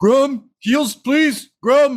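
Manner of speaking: very high, pleading, desperate yell. Game master voicing a character who is still on fire, yelling. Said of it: "He just yells".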